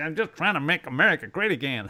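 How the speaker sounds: very loud, put-on Chicago gangster accent. Describing a game, quoting one of the mobsters you fight, in a Chicago mobster voice. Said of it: "like the Chicago monster sort of voice".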